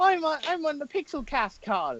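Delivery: very high, muddled, put-on Italian accent. Teased for putting on mixed accents, replying in a mock Italian-blend accent. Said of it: "put on a mixture between an Italian and a accent".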